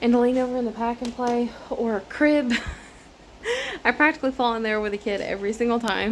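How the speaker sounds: breathless, winded, still catching breath. Talking right after cleaning out the pack and play: out of breath. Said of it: "I'm out of breath from doing that".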